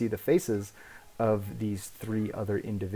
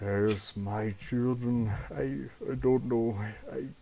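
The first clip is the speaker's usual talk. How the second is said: murky, indistinct, halting, thick, muddled mumbling; 2 semitones higher than usual. Narrating a vision, the speaker voices an older General Westfall speaking to you, thick, muddled Westfall voice. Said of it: "talking in this thick, muddled voice".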